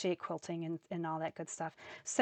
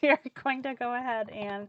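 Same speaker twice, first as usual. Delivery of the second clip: words broken up by laughter while talking; 4 semitones higher than usual. Starting the next stamping step after her own joke, laughing while talking. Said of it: "sorry, I'm laughing at my own jokes".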